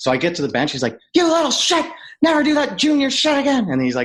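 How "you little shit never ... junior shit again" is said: very high, furious, ranting telling-off. Retelling a coach telling off a player at the bench: imitating Quenneville going off. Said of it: "going off".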